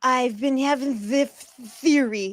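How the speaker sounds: put-on slurred drunk speech. Retelling how a drunk speaker sounded in the spaces: imitating Chris's drunk slurred speech. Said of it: "such a slurred speech".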